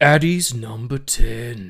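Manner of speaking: very loud, booming movie trailer announcer voice. Announcing number 10 of a top-ten film list, movie trailer guy voice. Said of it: "It's my trailer guy voice".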